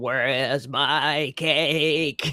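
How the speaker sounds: spooky horror voice, very slow. Joking about Father's Day, trying to do a voice from The Shining. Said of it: "We're trying to do the voice".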